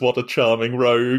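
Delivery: plain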